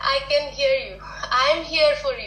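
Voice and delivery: ordinary delivery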